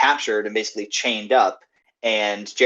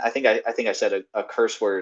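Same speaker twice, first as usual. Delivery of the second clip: ordinary talk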